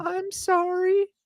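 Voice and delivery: mock very high, tearful little kid voice. Retelling a game where a kid apologized over voice chat: imitating a crying kid. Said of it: "And just the fucking crying".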